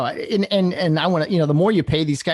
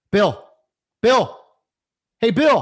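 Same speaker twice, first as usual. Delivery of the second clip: put-on mild, high-pitched calling out; 5 semitones higher than usual. Acting out yelling from the dugout at umpire bill for attention, acting out yelling. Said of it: "I'm I'm yelling at Bill".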